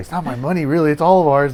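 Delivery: plain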